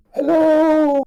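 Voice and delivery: shrill, high, loud calling shout. Calling out into a dark level in character: in-character shout. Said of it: "I'm gonna have to shout".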